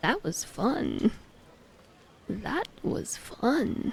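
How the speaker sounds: soft, breathy, creaky vocal fry. After telling someone they need more vocal fry, demonstrating with vocal fry. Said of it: "You need more like vocal fry though".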